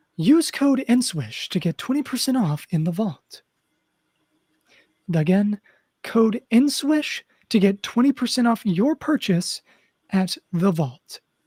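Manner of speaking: put-on radio announcer voice, ad read. Reading a promo code plug, in a put-on announcer voice. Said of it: "let me get my announcer voice".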